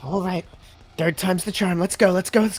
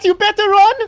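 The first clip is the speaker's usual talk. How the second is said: very high, loud, shouted in-character voice; 14 semitones higher, 7 dB louder than usual. Shouting after a fleeing goblin in character: shouting a threat in character. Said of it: "Did that sound cool?".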